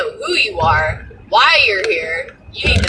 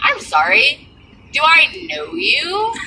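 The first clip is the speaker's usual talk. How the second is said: very slow, baffled, confused, pitched-up delivery; 6 semitones higher than usual. Retelling answering the door to a woman who greets her by name, acting out being confused. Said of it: "looking at her real confused".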